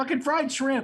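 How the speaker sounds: loud, high shout. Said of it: "and shout".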